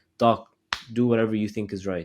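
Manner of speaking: plain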